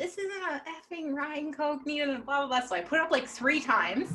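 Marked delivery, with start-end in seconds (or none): 0.0-2.2 put-on high, drunken screaming rant. Retelling a drunk customer at the bar: imitating a drunk customer screaming. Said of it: "Screaming at me".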